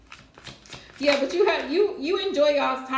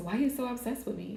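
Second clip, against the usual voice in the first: soft, fast pop-diva impression with a breathy, showy style. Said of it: "In my [name] voice".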